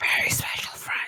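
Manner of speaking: breathy whisper, very close to the mic. Adding a remark during a conversation in the game: whispering into the mic. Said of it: "Please stop whispering into the mic".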